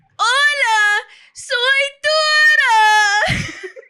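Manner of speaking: very high, loud character voice, squealed and stretched out. Doing it on command after scooting back: Dora impression. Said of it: "I actually can do a mean Dora impression".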